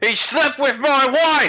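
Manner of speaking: sudden, very high, drawn-out yell. Voicing someone behind the group who cuts in: yelling. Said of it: "this voice from behind yell".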